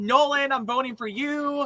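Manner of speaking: light, high, mild yell, half a scream. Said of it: "just screams out, like".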